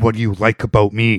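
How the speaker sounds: mock severe, strict voice. Retelling a movie scene where a character suddenly asks: imitating a very stern question. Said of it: "very stern".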